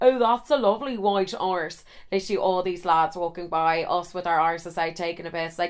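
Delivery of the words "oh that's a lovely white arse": ordinary delivery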